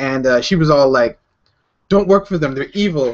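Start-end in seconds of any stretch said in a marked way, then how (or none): 1.9-3.2 non-native, broken English. Retelling a friend's warning about a company: imitating a friend's broken English. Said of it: "she said it in broken English".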